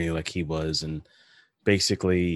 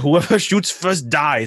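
put-on thick German accent, higher and louder; 9 semitones higher, 5 dB louder than usual. Retelling a director threatening a star on set: thick German accent as Werner Herzog. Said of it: "in his thick German accent".

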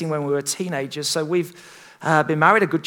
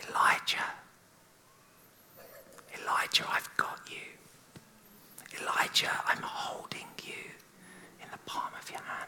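very hushed, close whisper, barely audible. Imagining what god says to elijah: whispering as god. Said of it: "I wonder what he whispered".

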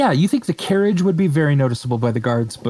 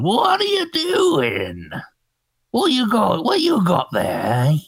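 put-on old elf voice, much higher, slower; 7 semitones higher than usual. Narrating a game scene, voicing an elf bursting out the front door, in an old elf voice. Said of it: "an old elf with a crossbow pops on out".

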